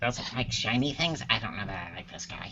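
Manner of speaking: soft, quick aside under breath.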